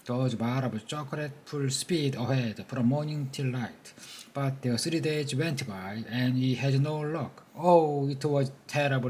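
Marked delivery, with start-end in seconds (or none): none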